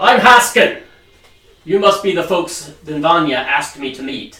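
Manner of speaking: very loud, booming, friendly shout. Narrating a man greeting the arriving party at a farmstead, friendly greeting shout. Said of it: "he holds his hand out in greeting and shouts".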